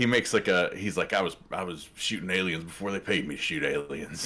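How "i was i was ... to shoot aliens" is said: put-on thick country accent, quieter. Quoting a movie character's line: Matthew McConaughey impression. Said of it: "doing an impression of Matthew McConaughey".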